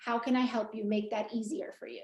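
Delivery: heartfelt, caring voice that sounds from the heart. Explaining staff phone training, showing how the voice should sound: heartfelt caring voice. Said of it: "that voice has to sound like a heart".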